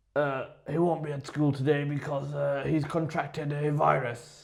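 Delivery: fake strained voice, as if straining. Demonstrating a father's call to school about his son, sounding like straining on the toilet. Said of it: "Why do you sound like you're on the toilet".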